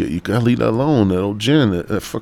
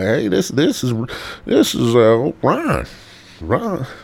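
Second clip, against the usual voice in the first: put-on drawl, higher; 4 semitones higher than usual. Retelling a phone call from the father: imitating a drawl. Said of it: "he had a little drawl".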